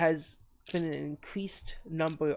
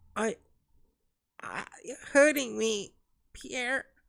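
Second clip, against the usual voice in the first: high, wincing, pained, hurt voice; 6 semitones higher than usual. Voicing a character over the mic, in a pained character voice. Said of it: "when I'm doing his voice".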